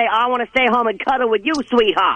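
ordinary talk, nothing marked

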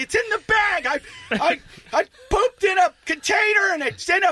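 put-on nervous yelling. Recounting handing over a sample at an appointment, retelling a nervous yell. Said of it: "I was so nervous".

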